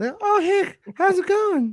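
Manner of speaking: little squeaky voice. Pitching a voice for the guy in the truck, trying a little squeaky voice. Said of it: "a little squeaky voice?".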